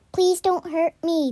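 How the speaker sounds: imploring, begging voice. Caught taking vegetables from a garden, the young man begs the angry voice, begging. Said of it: "begged the young man".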